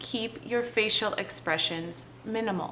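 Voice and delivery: soft, calm, even, hushed voice. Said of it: "You can see that probably already you're feeling".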